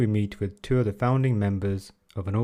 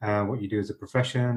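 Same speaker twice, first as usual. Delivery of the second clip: ordinary talk, nothing marked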